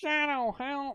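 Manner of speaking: very high, squeaky bee voice. Discussing a Sonic game, the speaker does a Charmy impression. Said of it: "Gotta do my best Charmy impression".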